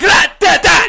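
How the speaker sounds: very loud. Reacting during a bit, prompting another speaker's remark: too loud. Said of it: "That's too loud".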